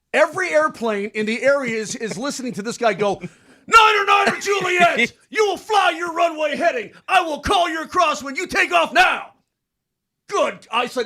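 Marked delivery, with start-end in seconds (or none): 3.6-10.6 very high, agitated put-on yell. A pilot retells the controller on the radio frequency: imitating a yelling controller. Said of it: "he was yelling at".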